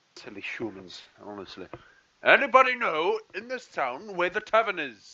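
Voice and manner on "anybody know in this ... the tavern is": high, raised calling-out shout. A player's character in a town marketplace, shouting. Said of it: "do you shout that in the marketplace".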